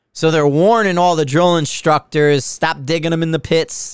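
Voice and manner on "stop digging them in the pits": ordinary talk, nothing marked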